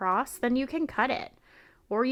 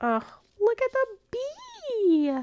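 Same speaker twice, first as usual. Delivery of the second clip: sudden very high, swooping, delighted excited cry; 13 semitones higher than usual. Looking through die cuts and spotting a bee: voice suddenly very high. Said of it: "My voice just got so high".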